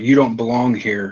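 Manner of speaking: hostile, aggressive, yelled shout. Voicing a guard shouting at intruders: guard shouting. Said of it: "you shout".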